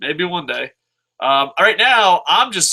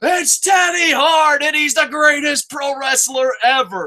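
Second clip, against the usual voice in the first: acted very high, shrill shriek; 11 semitones higher than usual. Retelling yelling when no one recognized the wrestler: imitating own scream. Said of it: "I just screamed".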